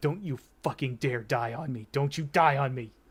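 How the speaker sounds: frantic muttering under the breath. Voicing a character pacing near an unconscious man, frantic muttering under breath. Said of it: "pacing back and forth frantically, just muttering under breath".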